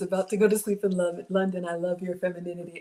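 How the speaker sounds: plain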